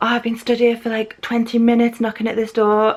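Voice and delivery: put-on angry ranting voice. Retelling a boyfriend complaining about knocking at the door: imitating an angry boyfriend. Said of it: "He was really kicking off at me".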